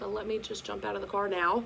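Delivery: normal talking voice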